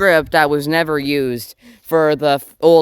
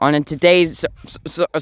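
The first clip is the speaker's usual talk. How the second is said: stammering, stuttering, tripping over words. A youtuber opening a new video, stuttering through the intro. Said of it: "sorry, I'm stuttering".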